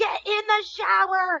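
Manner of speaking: very high, shrill, shouted yell. A mother retells yelling at her son to get his act together, retelling a yell. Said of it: "And I'm yelling".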